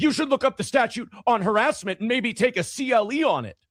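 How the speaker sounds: mock frantic, panicked, very high-pitched voice. Retelling a man going up to the lawyer after court adjourned, imitating a panicked man. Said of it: "And he's like panicked".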